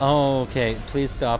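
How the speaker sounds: frantic, panicked voice. Streamer in the middle of a game, panicking. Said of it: "I'm panicking".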